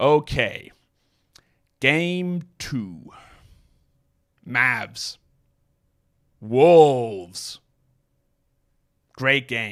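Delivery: very slow crawl, "wolves" stretched out. A fast talker mocking how slowly some people talk: deliberately very slow speech. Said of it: "If I spoke at that speed".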